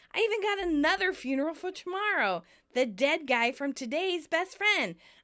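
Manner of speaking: high, excited, enthusiastic gush. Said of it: "Monica enthusiastically goes".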